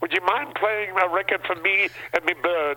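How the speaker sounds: put-on British accent, clipped. Retelling a man calling Cousin Brucey to request a record, put-on clipped British accent. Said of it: "They started talking with clipped tongue like British. ... listen to this now".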